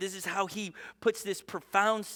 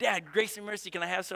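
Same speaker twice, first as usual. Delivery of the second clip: normal talking voice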